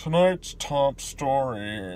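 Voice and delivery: ridiculous, slow, drawn-out newscaster voice. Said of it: "you had this ridiculous newscaster go".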